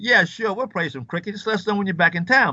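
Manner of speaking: play-acted patronizing, talking-down condescending tone. Speaker retells how the man he challenged to cricket answered, imitating a condescending reply. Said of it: "condescendingly said".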